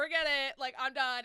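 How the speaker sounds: loud, fed-up, exasperated outburst.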